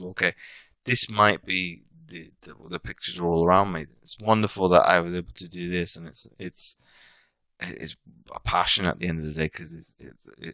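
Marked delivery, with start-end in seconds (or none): none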